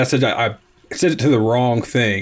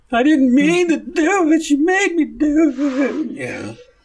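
put-on very high, blubbering, weepy sobbing. Acting out a man who calls after stabbing a woman, imitating a man crying. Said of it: "He calls and cries about".

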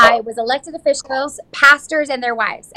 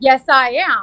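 put-on proud voice. Retelling how a man answered her question: imitating a proud reply. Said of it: "And he gets all proud".

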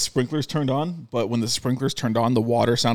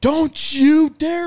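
very high, shrill, loud scream; 6 dB louder than usual. Retelling how a bird was brought in at dawn: imitating Kendi screaming. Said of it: "Kendi just screamed".

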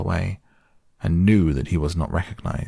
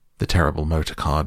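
ordinary delivery

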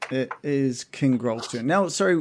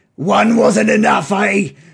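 very loud, menacing, threatening jeering; 7 semitones higher, 11 dB louder than usual. A game narrator voices a Goliath standing over a player's character, menacing. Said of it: "He says menacingly to you".

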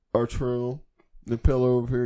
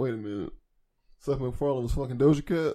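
ordinary delivery

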